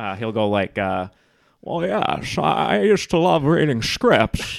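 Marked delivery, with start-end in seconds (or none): 1.6-4.6 put-on slow, high, old retired actor voice. Showing how the old retired version sounds: Jimmy Stewart voice. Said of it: "I do Jimmy Stewart as".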